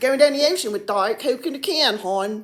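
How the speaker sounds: loud Baltimore accent, local way of talking. Showing how he talked when he lived in Baltimore; Baltimore accent. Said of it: "that's how I talked".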